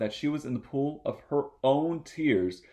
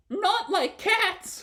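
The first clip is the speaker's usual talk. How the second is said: shrill, impassioned, very high passionate outcry. Narrator reads the mouse's reply to Alice in a shrill, passionate voice. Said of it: "cried the mouse in a shrill, passionate voice".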